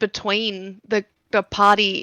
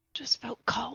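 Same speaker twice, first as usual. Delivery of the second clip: unvoiced whisper.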